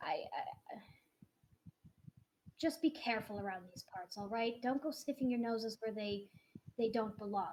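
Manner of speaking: quiet whisper in character voice. Voicing Larry warning the players at the door: whispering in character. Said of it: "whisper into your ears a little bit".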